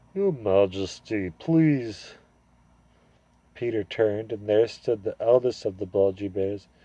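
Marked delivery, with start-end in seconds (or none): 0.2-2.2 thick, drowsy, heavy-tongued sleepy bear voice. Reading a story aloud, a bear addresses the High King, thick, sleepy voice. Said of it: "a thick, sleepy voice said".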